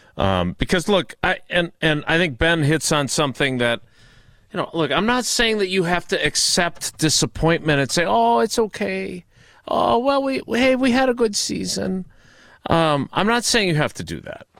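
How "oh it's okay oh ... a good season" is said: put-on baby voice, slower. Speaking in a discussion about coping with a disappointing loss, shifting into a joking voice. Baby voice, put on. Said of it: "I kind of like this new baby voice".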